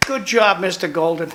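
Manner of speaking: dry, sarcastic, mocking put-on praise. Complaining to the others about local leadership: sarcastic praise. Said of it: "I know I'm being sarcastic".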